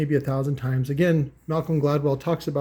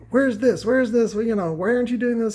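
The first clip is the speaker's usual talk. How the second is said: mock hollering, high and pitched-up; 8 semitones higher than usual. Retelling how the guy at the finance desk started yelling: imitating someone yelling.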